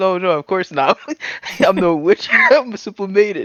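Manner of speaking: high, loud, feigned-innocent, over-protesting delivery. Describing a comedy skit about witches, voicing her answer as a feigned denial. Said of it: "And she goes".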